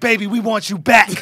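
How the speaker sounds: put-on pleading tone. Imagining women's messages asking him back: imitating women asking him back.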